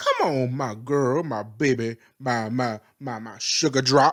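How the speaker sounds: low, deep, slow southern drawl. Describing the character Pietro by imitating him, Pietro's southern drawl. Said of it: "he has a southern drawl".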